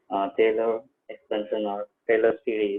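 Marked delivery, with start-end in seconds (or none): none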